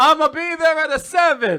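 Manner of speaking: bad put-on Italian accent, very high and loud. Showing how he gets through boring text messages to people, in a bad italian accent. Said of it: "Like bad Italian accent".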